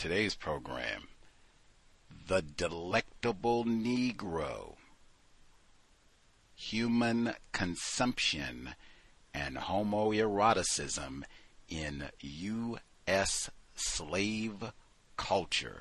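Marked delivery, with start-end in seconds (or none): 2.3-15.8 drawn out very slowly and deliberately, word by word. Naming a book's full title for today's program, said slowly. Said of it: "let me say it slow".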